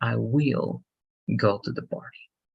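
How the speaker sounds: the word "will" leaned on hard. Showing where emphasis falls in an example sentence: stress on will. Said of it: "Just will. We put emphasis over there".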